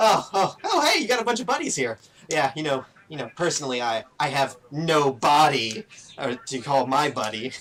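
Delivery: loud skeleton voice cracking up laughing mid-sentence. Voicing a skeleton telling a joke to the party: skeleton laughing while talking. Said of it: "this skeleton just loses his mind laughing".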